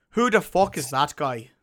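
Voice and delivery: loud put-on Irish accent. Repeating a line from a story for the listeners, doing a Conor McGregor impression. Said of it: "I was doing a Conor McGregor".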